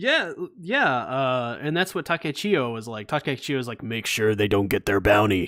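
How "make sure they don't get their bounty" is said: cartoonish janitor voice impression. Speaker quoting a character's line, Scruffy the janitor impression. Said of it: "pretty good impression of Scruffy the janitor from Futurama".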